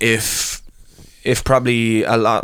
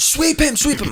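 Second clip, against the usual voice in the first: very high, shrill shout. Retelling a match, one of the guys shouting from the side: imitating Julian shouting. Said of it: "was shouting at me being like".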